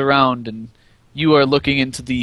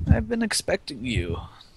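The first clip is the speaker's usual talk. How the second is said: soft-spoken, low-key, quiet voice, slightly high-pitched; 7 semitones higher, 7 dB quieter than usual. Voicing the man at the desk as he greets the players, quiet voice. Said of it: "Kind of a quiet voice".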